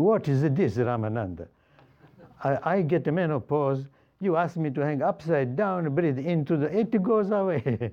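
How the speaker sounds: put-on teasing Italian accent. Retelling how a woman joked with the teacher, in her joking italian accent. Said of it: "she was joking in her Italian accent".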